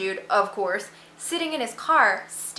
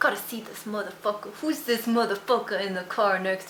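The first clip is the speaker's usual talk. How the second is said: sudden put-on street-gangster voice; 2 semitones lower, 6 dB quieter than usual. Acting out a driver pulling up beside a bad driver: put-on gangster voice. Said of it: "I don't know why I got gangster suddenly".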